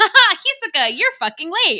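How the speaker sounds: bouncy, very cheery, shrill, very high, very loud. Acting out a character greeting a late teammate: very cheery voice. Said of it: "like, very cheery".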